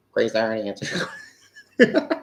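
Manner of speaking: geeky, nerd-style voice. Repeating her answer to grace the way she just said it, nerdy voice. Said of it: "Why did I say that like that?".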